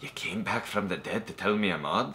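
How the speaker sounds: soft, laid-on, bad put-on Irish accent. Recalling what stuck out in a film you saw as a child, in Tom Cruise's awful Irish accent. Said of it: "Tom Cruise's awful Irish accent".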